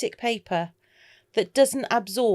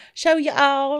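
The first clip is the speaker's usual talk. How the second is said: terrible put-on American accent, higher and louder; 6 semitones higher, 4 dB louder than usual. Demonstrating inks for viewers, joking in the worst ever american accent. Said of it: "the worst ever American accent".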